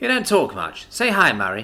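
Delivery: ordinary delivery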